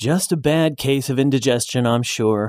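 ordinary delivery

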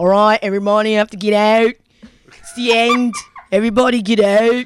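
dodgy, bad Aussie bogan accent. Retelling the club security guy telling everyone to get out: dodgy aussie bogan accent. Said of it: "dodgy. British Aussie bogan accent".

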